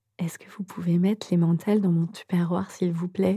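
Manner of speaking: tiny, shy, timid little voice, soft. Retelling asking the person at the cheese stall, in a small timid voice. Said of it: "Avec une petite voix frileuse comme ça".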